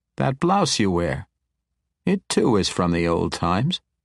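plain

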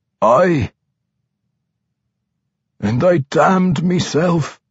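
high voice shaking on every syllable. Reading a struggling vampire's reply to his old friend: voice shaking. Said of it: "his voice shaking with every syllable".

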